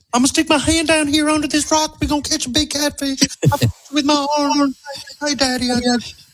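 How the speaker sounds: put-on very high-pitched, country, Southern Alabama accent. Imitating a girl from Alabama in old clips, Southern accent. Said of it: "How does that voice come out".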